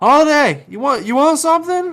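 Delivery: very high, loud holler. Calling back to a companion in the game: screaming back to someone. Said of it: "I'm gonna scream back to Holiday".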